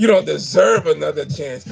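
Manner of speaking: put-on disgusted tone of voice. Retelling how a man scolded people who refused food: imitating a disgusted voice. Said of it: "The disgust in his fucking voice".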